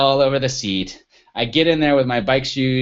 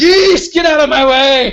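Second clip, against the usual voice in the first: very loud, very high, shrill, drawn-out angry scream; 13 semitones higher, 9 dB louder than usual. Retelling a rainy bike ride, geese blocking the path: retelling a yell at geese. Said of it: "I'm yelling at the geese".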